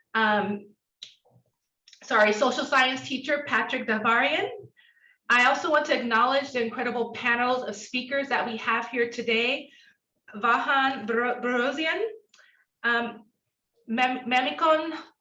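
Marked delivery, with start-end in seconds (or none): 10.3-14.9 slow, hesitant, nervous stumbling over words. Introducing panel speakers by name: nervous stumbling over names. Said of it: "I'm getting nervous when I say names".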